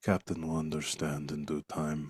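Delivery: hushed, very soft voice. Narrating a role-play, the speaker voices a character who speaks in a very quiet voice. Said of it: "in a very quiet voice".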